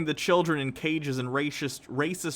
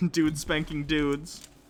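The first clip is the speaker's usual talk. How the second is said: ordinary talk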